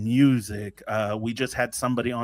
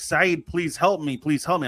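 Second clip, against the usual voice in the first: mock yelling, higher pitch; 6 semitones higher than usual. Telling a joke, the speaker acts out his wife yelling for help, retelling a yelled plea. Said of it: "she's yelling".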